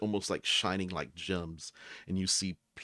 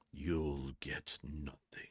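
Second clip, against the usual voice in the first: low, hushed, mysterious disembodied voice drifting from above; 4 semitones lower, 7 dB quieter than usual. Narrating a scene, a voice speaks from the darkness above: mysterious voice from above. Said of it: "that's your mysterious voice coming from above".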